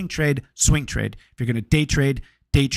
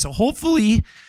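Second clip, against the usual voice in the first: voice cracking and breaking up high; 8 semitones higher than usual. Speaker explaining small trading accounts to viewers, voice cracking. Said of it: "voice just cracked like I'm going through puberty".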